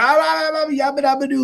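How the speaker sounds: very high, loud screaming yell. Describing how loud they sound in the car: Fred Flintstone yell. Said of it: "like Fred Flintstone".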